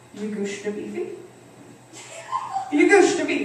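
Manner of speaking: put-on broken baby talk with Italian accent. Imitating how her dad talks at dinner, in Italian-accented baby talk. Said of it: "mishmash of baby talk, English, Portuguese, and an Italian accent".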